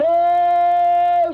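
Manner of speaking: shouting, ceremonial tone. Retelling a parade-ground ceremony, a guy hollers the command; hollered parade command. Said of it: "You hear this guy holler".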